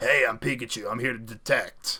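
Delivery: gruff, rough New York accent. Talking about a Pikachu game, a speaker acts out Pikachu in a gruff New York voice. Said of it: "acting all like a New York City gruff voice".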